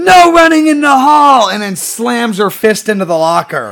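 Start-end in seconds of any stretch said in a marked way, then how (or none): 0.0-1.5 ear-splitting shriek, very high pitched and very loud. Retelling what a woman did when two kids ran down the hall; retelling a scream. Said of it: "She screams".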